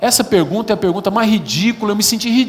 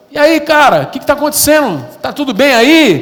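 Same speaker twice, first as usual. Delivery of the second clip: play-acted shouting, raised and high-pitched; 6 semitones higher, 5 dB louder than usual. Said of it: "eu gritando".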